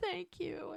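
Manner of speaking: very high, tearful crying voice. Retelling a birth scene, a mother speaking: imitating someone crying. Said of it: "as she cries".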